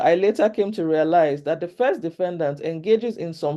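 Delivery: ordinary talk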